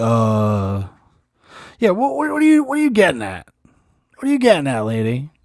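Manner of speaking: put-on stammer, tripping over repeated words. Retelling how Phil answered the lady, imitating Phil stuttering. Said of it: "he stutters for a second".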